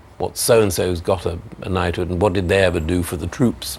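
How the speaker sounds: ordinary delivery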